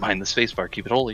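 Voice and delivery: put-on whisper. Retelling a dream where someone whispers in the darkness: imitating Candy whispering. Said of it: "just whispering".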